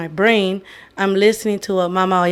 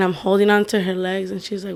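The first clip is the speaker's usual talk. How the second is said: ordinary talk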